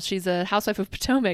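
ordinary delivery

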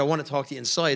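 ordinary delivery

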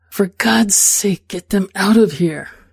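hissing words. The narrator pinches Luis's waist and speaks into his ear, hissing. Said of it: "hiss into his ear".

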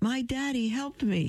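proud, beaming, very high-pitched voice. A boy speaks up from the back of the classroom, beaming. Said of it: "he beamed".

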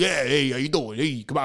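put-on easygoing New York accent, male voice. An actor recalls playing a guy from New York: New York accent. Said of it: "playing this guy from New York".

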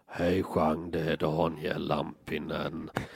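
low, flat, drawn-out monotone, very slow. Retelling a confusing phone call from Daniel Lampinen, in a monotone impression of him. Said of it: "pratade så här monotont".

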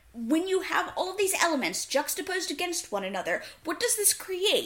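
heated, worked-up voice. Questioning what a story's elements are for, the speaker gets heated. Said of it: "I'm getting surprisingly heated".

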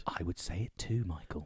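deep, very low, hushed, murmured period gangster voice. Agreeing with a co-speaker in a debate about condiments, Peaky Blinders accent. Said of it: "You sound like you're in the Peaky Blinders there".

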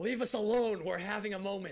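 loud shouting, pitched high. Retelling telling someone off for interrupting: imitating own yell. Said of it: "I just yelled".

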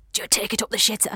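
hushed whisper, spoken close to the ear. Retelling what a fellow actor said on stage: imitating Barry Hall whispering. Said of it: "he used to whisper in our ear and say".

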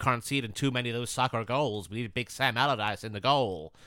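put-on American accent. Imagining what the american owners will say, in a put-on american accent. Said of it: "That's a good American accent there".

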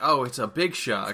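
plain

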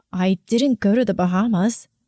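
plain

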